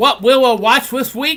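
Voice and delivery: high, loud cartoon-character voice. Saying the line after being asked to do it: Elmer Fudd voice. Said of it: "you gotta do more like Elmer Fudd".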